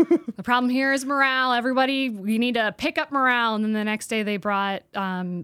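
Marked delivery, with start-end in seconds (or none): 0.0-3.5 fake Southern drawl, higher pitched. Retelling what a manager said at the bus bay: imitating a put-on Southern accent. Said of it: "was adopting a Southern accent".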